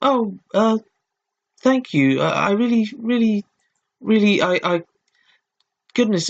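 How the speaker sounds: put-on stumbling, stammering high-pitched girl voice. Voicing a female character, in a high-pitched girl voice. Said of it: "She just had a normal high pitched, therefore it's a girl voice".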